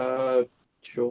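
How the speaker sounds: glum, sad-sounding tone. Agreeing to a suggestion during a game: sounding sad. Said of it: "you sound so sad".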